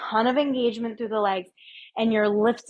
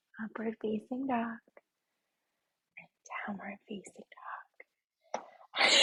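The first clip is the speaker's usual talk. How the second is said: hushed, soft, very quiet whisper; 13 dB quieter than usual. An instructor cues yoga poses to the class, whispering. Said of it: "I'm whispering it".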